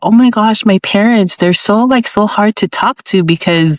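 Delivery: plain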